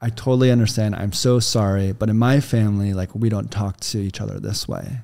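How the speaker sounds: very calm, composed, polite, keeping it together. Speaker retells answering someone who was berating her, retelling her calm reply. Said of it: "So I very calmly said".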